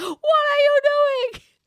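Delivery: put-on shrill, very high yelling outburst with Italian sound. Retelling how Jay yelled at Zach: imitating Jay yelling. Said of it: "yelling at Zach with, like, the Italian".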